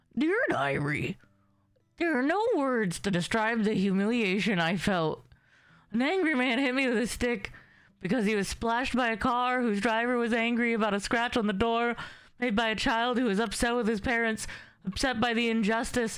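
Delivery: strange, high cartoon-dog voice. The speaker voices a dog reading its diary, in a weird dog voice. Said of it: "What's the diary of the weird dog's voice?".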